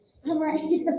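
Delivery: whispered. Retelling telling a co-host they were right behind them: imitating own whisper. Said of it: "And I was whispering 'cause we're still on air".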